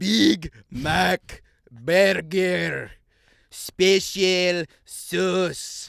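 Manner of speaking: slow loud word by word. A man repeating his order to a confused employee, slower and louder. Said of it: "this time speaking slower and louder".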